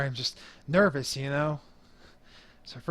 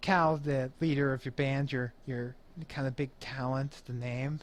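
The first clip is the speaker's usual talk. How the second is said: normal talking voice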